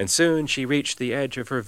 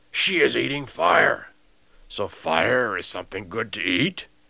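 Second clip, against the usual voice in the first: growling, beastly monster voice. Narrating a story, voicing the monster's reply: growling monster voice. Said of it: "growled the monster".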